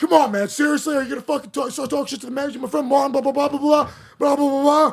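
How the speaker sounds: high-pitched, scolding yell. Role-playing a confrontation with truck as asked: yelling at someone. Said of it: "You yell at Truck".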